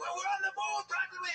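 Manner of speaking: very high, bad put-on yell. Recalling shooting a scene, yelling at the others in it: retelling a yell, bad Liam Neeson impression. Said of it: "And I'm yelling at you guys".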